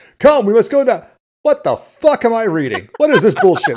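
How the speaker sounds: loud, high, swooping, animated heroic cartoon voice. Retelling a voice actor's outtakes reading lines: Lion-O voice. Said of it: "but in the Lion-O voice".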